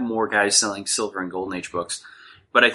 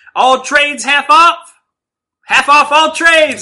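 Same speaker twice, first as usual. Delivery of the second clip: very loud, high, shrill hawker yell; 12 dB louder than usual. Describing a seller at Wizard shouting over and over, imitating a vendor's yell. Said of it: "And they yell every 30 seconds".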